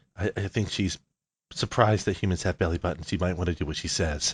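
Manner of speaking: soft, hushed whisper. Voicing a character who leans out from a corner: whispering. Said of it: "just whispers".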